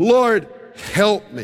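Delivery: play-acted, desperate, hysterical, sobbing cry. Retelling the woman's plea at his feet: imitating a hysterically crying plea. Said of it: "By now she's crying hysterically".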